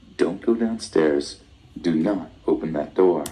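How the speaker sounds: ordinary talk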